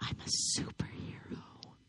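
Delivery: breathy, hushed whisper close to the ear. A man speaking to Sarah about her daughter, whispering in her ear. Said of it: "He whispers in her ear".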